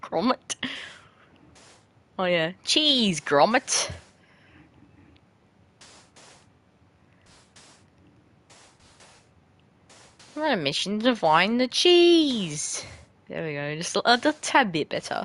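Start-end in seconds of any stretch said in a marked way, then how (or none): 2.6-12.8 fake, put-on British accent, drawn-out cheese. Trying out voices, slipping into a put-on British accent. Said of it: "I need to say like a British word and then I'll get myself into it".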